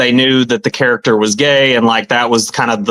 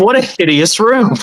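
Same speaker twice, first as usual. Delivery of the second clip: acted, very high, overly serious pronouncement tone; 9 semitones higher than usual. Retelling a movie scene, the speaker imitates a man being all serious. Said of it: "he's like being all serious".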